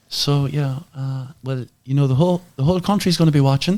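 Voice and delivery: put-on Galway accent. Retelling his mum's words before a race: imitating his mum's Galway accent. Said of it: "This is my best Galway accent".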